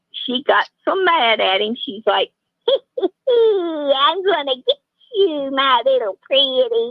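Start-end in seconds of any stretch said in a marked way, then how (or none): 2.6-6.9 very slow, stretched witch voice, drawn-out "I'm". Telling a joke about a witch mad at her boyfriend, in a witch voice. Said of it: "That's what the witch told him".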